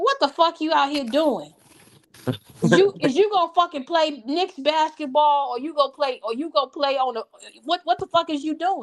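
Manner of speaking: play-acted furious, angry scolding. Imagining a father scolding his son about basketball: imitating an angry father scolding. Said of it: "And his father say".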